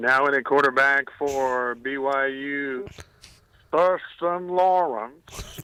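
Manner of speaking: very slow, drawn-out PA stadium announcer voice. A caller on a radio show, asked by the host, doing his stadium PA announcer voice. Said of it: "say Thurston Lawrence in his P A voice".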